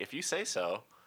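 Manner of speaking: mock cheeky, sassy tone. Retelling what was said after mishearing a friend: imitating own sassy reply. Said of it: "Why'd you have to get sassy about it?".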